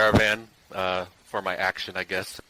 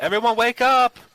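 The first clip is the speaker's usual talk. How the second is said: loud, very high, urgent alarm yell; 8 dB louder than usual. Spotting lizard-like creatures in the dark and warning the party: yelling in character. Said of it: "I'm going to yell out".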